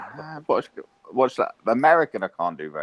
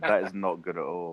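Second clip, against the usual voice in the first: normal talking voice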